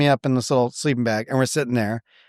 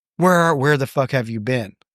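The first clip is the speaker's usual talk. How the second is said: mock tearful sobbing. Speaker retells what his then-girlfriend said to him, imitating someone crying. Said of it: "my girlfriend at the time crying".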